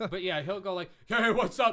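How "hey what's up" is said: booming, very loud, pitched-up macho voice.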